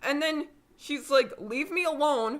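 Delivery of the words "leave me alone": put-on loud shout, higher pitch. Retelling a character's line in the lunchroom: imitating someone yelling. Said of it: "super loudly in the lunchroom".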